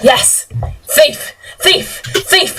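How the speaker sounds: high, slow, accusing cry. Voicing three attackers closing in on the party: shouting.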